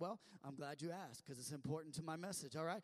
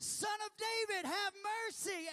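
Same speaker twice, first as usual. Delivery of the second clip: very high, loud, escalating yell; 9 dB louder than usual. Retelling a blind man's plea to Jesus, imitating a blind man yelling louder. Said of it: "he yells it louder and louder".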